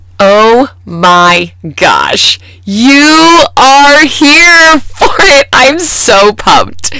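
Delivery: gushing excitement, very slow, swooping and drawn out. A podcast host greeting listeners at the start of the show, excited. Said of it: "I don't know if you can hear the excitement in my voice".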